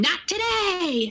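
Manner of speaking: play-acted, high-pitched, shrieking scream. Telling how a woman dashed across the yard, the speaker acts out her retold scream. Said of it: "She's like screaming".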